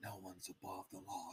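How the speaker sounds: meek, very soft, hushed stage whisper. Imitating a woman speaking about powerful men: imitating someone half-whispering. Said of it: "Why are you whispering?".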